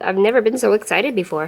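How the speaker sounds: heavily sarcastic voice with fake, mock excitement. Struggling to peel stickers with tweezers, then commenting: sarcastic. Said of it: "I'm being sarcastic".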